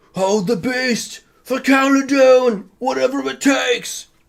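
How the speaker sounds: very high, loud yelled-out call. Game master voicing a character yelling out to the players, yelling out. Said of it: "you all hear him yell out".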